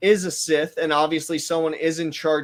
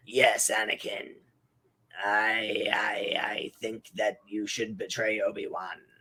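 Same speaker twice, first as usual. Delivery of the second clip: very low, very slow, drawn-out voice; 7 semitones lower, 7 dB quieter than usual. Imitating the Chancellor urging Anakin to betray Obi-Wan: Palpatine impression. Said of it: "he's just like".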